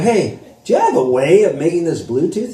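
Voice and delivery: ordinary talk, nothing marked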